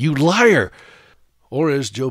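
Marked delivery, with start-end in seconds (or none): 0.0-0.7 acted indignant, accusing shout, loud and high. Retelling yelling down at the scale: imitating own yell. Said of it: "I would yell down at it".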